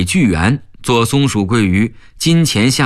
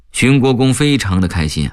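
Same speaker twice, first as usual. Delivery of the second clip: ordinary delivery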